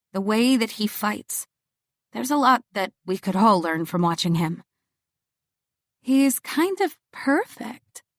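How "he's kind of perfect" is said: slow, dreamy voice, lingering on the words. Narrator praising how he fights while Sage laughs at her, in a dreamy voice. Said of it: "I say in a dreamy voice".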